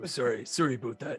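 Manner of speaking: put-on deep voice with Canadian accent. Apologizing in character after slipping out of voice: deep Canadian voice.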